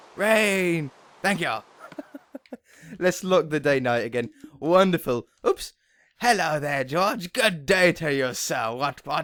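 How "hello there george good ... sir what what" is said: very posh, fancy, put-on upper-crust British voice. Greeting a character named George at the start of an episode, very posh British voice. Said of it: "I think of a very posh British voice".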